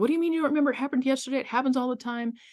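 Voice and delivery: play-acted, high, furious, angry yelling. Retelling yelling at a parent who claimed not to remember: imitating own past yelling. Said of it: "And I started yelling".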